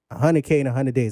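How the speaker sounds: normal talking voice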